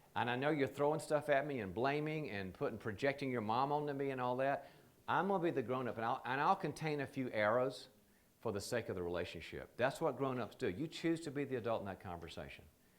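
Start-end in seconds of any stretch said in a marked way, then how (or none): none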